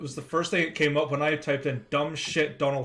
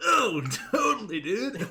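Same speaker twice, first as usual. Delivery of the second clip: high, swooping cartoon driver voice; 5 semitones higher than usual. Realizing he sounds like the Simpsons bus driver, he plays it up: Otto voice. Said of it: "I sound like the fucking bus driver".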